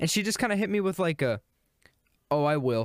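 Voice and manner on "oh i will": play-acted affronted, offended tone. Retelling a reply to "take your time": imitating an offended reply. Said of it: "she acted offended that I responded that way".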